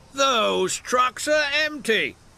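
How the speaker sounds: huffing out the words. Gordon, seeing the empty trucks uncovered by the wind, huffs the words. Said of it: "Gordon huffed".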